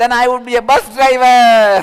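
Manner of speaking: very loud shouted chorus of voices. Retelling the kids' reply in a joke: imitating kids shouting together. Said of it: "chorously replies, shouting".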